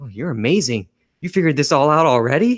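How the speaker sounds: mock ironic, insincere admiration, amused. Retelling a film scene, quoting a character: imitating sarcastic praise. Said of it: "sarcastically, he's like".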